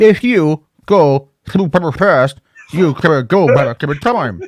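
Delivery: computerized speech-synthesizer voice. Retelling Stephen Hawking answering visitors, in a Stephen Hawking robot voice. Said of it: "robot voice".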